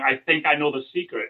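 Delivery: ordinary delivery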